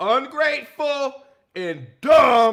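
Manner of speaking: furious, very loud, very slow, drawn-out angry outburst. Talking about a woman they're angry at, in a raised angry voice. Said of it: "why are you raising your voice for?".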